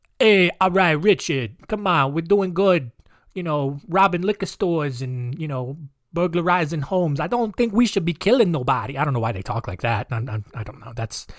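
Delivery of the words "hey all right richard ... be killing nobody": bad put-on New York accent. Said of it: "that's a bad New York accent".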